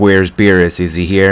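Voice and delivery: ordinary talk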